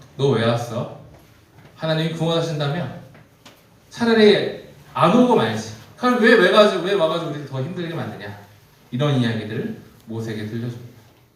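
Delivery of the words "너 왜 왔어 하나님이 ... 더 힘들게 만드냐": loud, high, resentful, ready-to-devour grumbling. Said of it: "그 말투는 원망, 불평, 뭐 거의 뭐 잡아먹을 듯이 이런 말투로".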